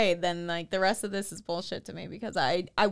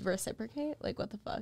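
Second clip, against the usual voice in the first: mock sassy tone, quieter; 11 dB quieter than usual. Retelling getting mad at him while a little drunk: imitating own sassy past self. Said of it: "so I'm extra sassy".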